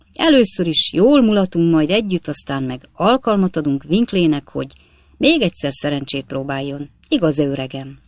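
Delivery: plain reading voice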